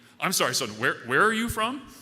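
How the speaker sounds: very loud, booming, gruff voice of authority. Retelling how a man answered a senior from Spearfish, use his booming, authoritatively gruff voice. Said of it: "booms this authoritatively gruff voice".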